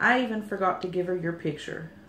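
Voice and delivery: ordinary talk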